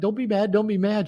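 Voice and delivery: high, small, whiny pleading voice.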